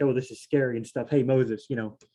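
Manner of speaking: ordinary delivery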